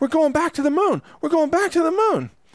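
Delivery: mock very high-pitched, giddy, ecstatic squeal of joy. Mocking people who celebrate a moon flight, the speaker does mock ecstatic screaming. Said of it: "ecstatically screaming like little girls".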